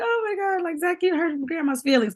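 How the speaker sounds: very high, pretend weepy old woman voice. Retelling how their mom fake cries with their son, imitating the fake crying. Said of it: "my mom always fake cry with him".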